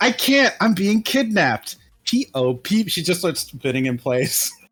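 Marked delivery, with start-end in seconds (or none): 0.0-1.8 very loud, high-pitched voice. Game master voices a woman answering a whispered warning, very loudly. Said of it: "She just says very loudly".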